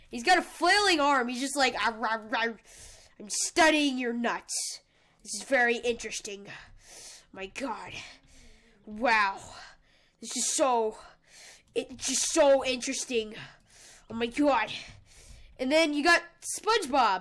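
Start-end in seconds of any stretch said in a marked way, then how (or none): 1.7-14.7 really angry voice, dropped low in pitch. Voicing a Squidward figure with a flailing arm: angry Squidward voice. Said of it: "he's really angry".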